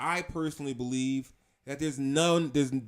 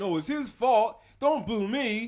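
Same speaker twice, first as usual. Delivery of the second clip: put-on high, drawn-out childish whine; 7 semitones higher than usual. Mocking a man's complaints after a fight, imitating someone whining like a child. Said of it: "whining like a child".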